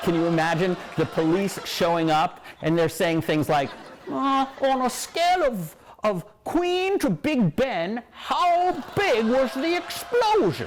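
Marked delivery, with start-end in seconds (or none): 4.1-10.7 put-on very high, very drawn-out British accent. A host imagines British police asking about an explosion, imitating a British accent. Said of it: "was that actually a British accent?".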